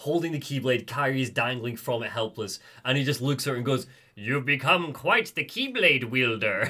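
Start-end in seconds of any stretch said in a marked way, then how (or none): 4.2-6.7 put-on smug, condescending, patronizing sassy tone. Retelling a scene where Xehanort taunts Kairi: sassy Xehanort line. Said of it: "It's like the sass, the absolute sass".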